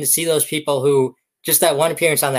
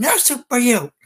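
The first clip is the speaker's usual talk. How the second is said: full-energy, all-in, committed, pitched-up acted delivery; 8 semitones higher than usual. Retelling how the actor ended the show: imitating a full-energy delivery. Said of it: "got the face, got the, you know, got the energy".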